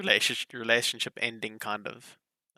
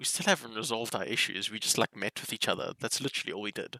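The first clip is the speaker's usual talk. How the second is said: ordinary talk, nothing marked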